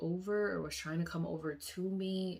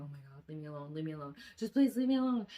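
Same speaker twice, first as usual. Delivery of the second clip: put-on tearful, crying voice; 4 dB louder than usual. Retelling a dream, begging to be left alone: retelling a crying plea. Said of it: "I'm crying, I'm crying, I'm crying".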